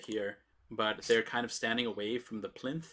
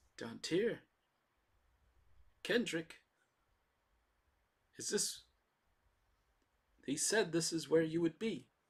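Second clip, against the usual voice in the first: weak voice, pitched high; 6 semitones higher than usual. Game master voices someone at the door calling for the heroes: Belgus Cuthilion's weak voice. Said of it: "just a weak voice".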